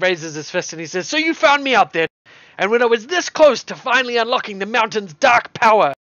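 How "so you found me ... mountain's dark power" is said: high, loud, yelled-out outburst. As the player moves to cuff him, the mayor raises his fist, Reed McBannon shouting. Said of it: "he just shouts out".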